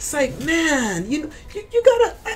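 overwhelmed, very high gush with laughter through it.

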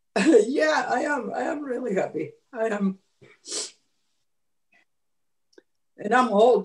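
crying speech. Speaking to everyone after reconnecting with someone, crying while talking. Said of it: "That's why I'm crying".

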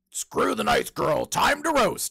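very loud, high-pitched, twisted, wicked devilish voice. Acting out what a devil-costumed contestant could have said: twisted devilish voice. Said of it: "then she could have changed her voice".

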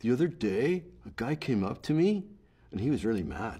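Canadian rise intonation. Speaker explaining the canadian rise, then demonstrating it: canadian rise intonation. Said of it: "it's called the Canadian rise".

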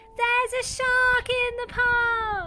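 high cry at the top of his lungs, "park" drawn out. Reading a children's story aloud, voicing a character crying out in his loudest voice. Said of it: "In his loudest voice, Timothy cries".

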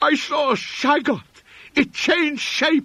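very high, loud, half-incoherent frenzied torrent of raving. A man who knew the narrator at once pours out words, frenzied, half-incoherent raving. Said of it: "vacillating between frenzy and apathy. He knew me at once and began pouring out a meaningless, half-incoherent torrent of words in my direction".

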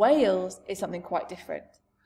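ordinary delivery

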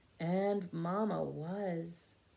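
ordinary delivery

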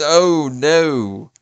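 British English accent. Reacting to narrowly failing a timed game level: british accent. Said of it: "I got a British accent on that one".

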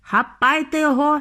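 authoritative tone. In a story, a man orders others to seize the tiny boy on the TV, commanding. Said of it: "наказав містер Вонка".

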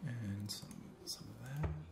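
very quiet voice. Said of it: "Your voice is very quiet".

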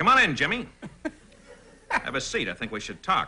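animated, heavy mobster villain voice. Demonstrating his new improv villain character to the others: mobster villain voice. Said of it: "he's kind of a mobster kind of guy who goes".

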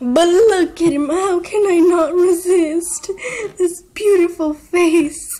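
laughing through it, very high-pitched and very loud. Showing off pets on camera to viewers, laughing. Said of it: "I just can't stop laughing".

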